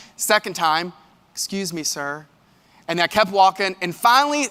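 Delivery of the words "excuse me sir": very sweet, soft, gentle, polite voice. Retelling how a woman behind him called out: imitating a very sweet, nice voice. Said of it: "in the nicest, sweetest voice".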